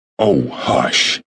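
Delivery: mildly scandalized. A mother hushes her son after he speaks against the machine, vaguely shocked. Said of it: "vaguely shocked".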